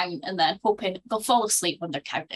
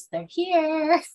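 the creepiest tiny voice, pitched up; 9 semitones higher, 3 dB louder than usual. Recapping a film scene, the speaker delivers the line in a creepy little Carol Anne voice. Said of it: "in the creepiest little voice".

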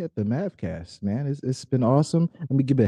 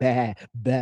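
plain

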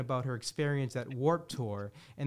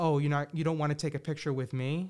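faster, put-on mock-sarcastic delivery. Retelling what a celebrity said to people who asked for a picture, retelling a sarcastic remark. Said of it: "in a very sarcastic way".

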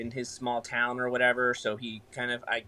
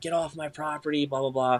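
angry outburst held in check, like put-on screaming; 3 semitones higher than usual. Retelling how a man sprinted down the driveway: imitating someone screaming. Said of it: "he's screaming and cursing".

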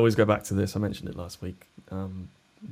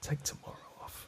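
soft, breathy, close-in whisper. Joking about the voice in a fighter's head: Jocko Willink voice. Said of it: "that Jocko Willink voice just going".

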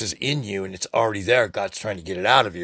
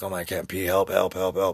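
put-on pained, desperate cry; 2 semitones lower than usual. Retelling being unable to pee while it was killing him: imitating own pained plea for help. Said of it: "it was killing me".

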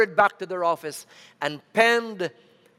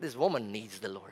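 openly mocking, scoffing tone; 7 semitones lower, 12 dB quieter than usual. Retelling what the songwriters said about a waitress: imitating a mocking remark. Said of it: "she said it even mockingly".

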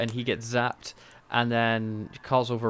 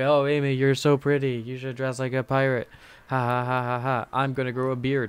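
fake drunken speech. Retelling Rory's dialogue from the episode: imitating drunk Rory. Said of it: "he's, like, drunk, basically".

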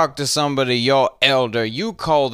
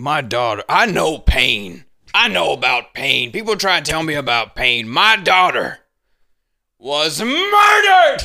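mock theatrical, heavy-handed, dramatic yell. Imitating a man who tells his story at church: imitating his dramatic yell. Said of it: "when he yells that story the same way over and over again".

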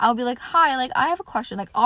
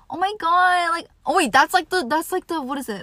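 put-on, high-pitched, gushing valley girl voice; 8 semitones higher, 4 dB louder than usual. Imitating how some girls talk to guys: imitating a valley voice. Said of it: "valley voice I'm kinda talking about".

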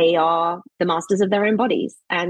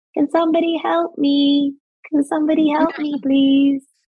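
put-on tiny, polite little child's voice, pitched up; 8 semitones higher than usual. Retelling how the little girl called for help at night, in a small child's voice. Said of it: "you'd hear this little voice".

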